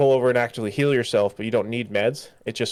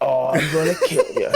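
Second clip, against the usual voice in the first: full cyborg action hero voice; 4 semitones higher, 3 dB louder than usual. Describing playing the game's hero: Rex Power Colt voice. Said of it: "You talk like this".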